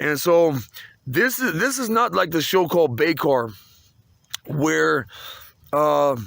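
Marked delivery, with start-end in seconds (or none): none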